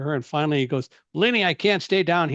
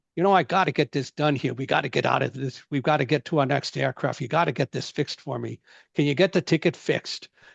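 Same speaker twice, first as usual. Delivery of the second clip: rough, gravelly, gravel-filled voice. Retelling overhearing a man at the Admirals Club counter, Peter Falk's gravelly voice. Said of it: "I heard this gravelly voice at the counter".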